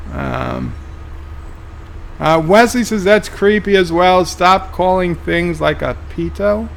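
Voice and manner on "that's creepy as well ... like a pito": usual speaking voice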